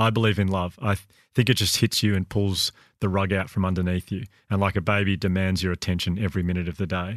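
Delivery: ordinary delivery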